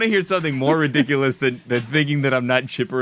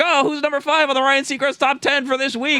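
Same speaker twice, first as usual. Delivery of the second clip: radio host voice, pitched up; 13 semitones higher than usual. Describing the host hopping into a radio studio: imitating Ryan Seacrest. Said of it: "He's like".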